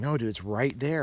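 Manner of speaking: normal talking voice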